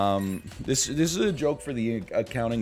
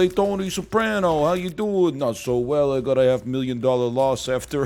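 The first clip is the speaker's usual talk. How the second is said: put-on assumed voice, higher in pitch and louder; 2 semitones higher, 3 dB louder than usual. Player in a game greeting tony soprano, in a put-on voice. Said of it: "I don't know why I put on this voice".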